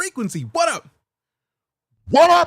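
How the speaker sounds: very loud, very high-pitched hollered yell. Speaker greeting someone whose name he just saw, yelling. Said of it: "Sorry for yelling".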